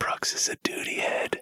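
speaking in a whisper. Teasing the other speaker, who lacks headphones: whispering. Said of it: "But I was whispering".

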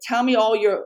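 plain

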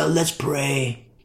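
put-on rock star voice. Mocking how they lead prayer like a concert, rock star voice. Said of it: "They do their rock star voice".

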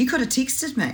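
put-on high-pitched, indignant, offended teenage girl voice. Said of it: "she'll go".

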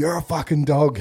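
put-on high-pitched screaming old man voice. Retelling an old guy banging on the glass and screaming at them in the box. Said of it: "there's this old guy just screaming at me going".

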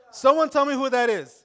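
loud, high, projected calling out.

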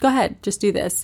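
breezy, very casual, offhand delivery. Retelling how the man told the speaker to undress: imitating a very casual tone. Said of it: "just very casual".

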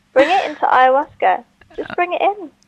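high-pitched delivery spoken through laughter. Retelling what a woman said while laughing at him, imitating her laughing. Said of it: "She's just laughing at me saying".

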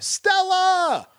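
mock movie-style scream, very high and shrill. Giving an example of an actor's yell in a film: imitating a famous movie scream. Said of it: "the yell, the scream".

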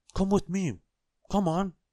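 very high-pitched crying-out call. Reading a children's story, one man calls to the farmer, crying out. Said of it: "Cried Mr. Forgetful".

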